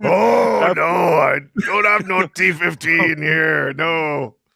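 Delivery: very slow voice, dragging every word out. Joking that the other speaker sounds like a Star Wars character: Watto voice. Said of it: "you sound like Watto from the s-, from Star Wars".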